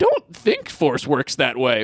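animated, swooping, sing-song tiny sage puppet voice. Pitching a sketch where a young student corrects the teacher: high-pitched Yoda voice. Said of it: "It's just Miss Piggy when you do Yoda up high".

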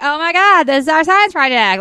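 ditzy, empty-headed airhead lady voice. Describing the woman paired with Slater, quoting her: ditzy airhead voice. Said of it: "like an airhead lady because she's like".

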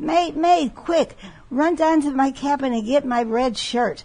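high, loud, screaming voice. Telling a pirate joke, the speaker is retelling a captain's scream to his mate. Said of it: "he's screaming".

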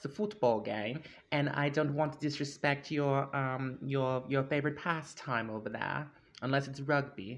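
imitated British accent. Joking to a listener from the UK about football, put-on British accent. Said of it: "how was my accent?".

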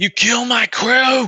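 very high-pitched goblin shout. Game master voices the hobgoblin captain shouting at the group: hobgoblin captain shouting. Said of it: "the hobgoblin captain sort of shouts".

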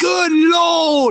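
very high exclamation with "Lord" stretched out long. Imagining a wrestling match call: worst Nigel McGuinness impression. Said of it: "worst Nigel McGuinness impression ever".

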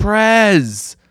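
high, loud yell carried across a room.

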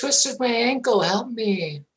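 put-on fake luring, coaxing voice. The game master voices a figure calling to a character, in a luring fake voice. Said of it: "that voice".

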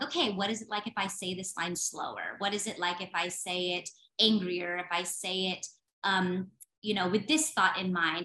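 ordinary talk

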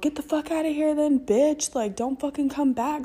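shrill, high-pitched screaming. Retelling a guy screaming at a woman, imitating a man screaming. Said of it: "this guy like screaming at homegirl".

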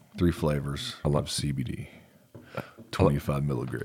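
very deep, soft bass voice, way down low. Host listing a sponsor's products, in a very deep voice.

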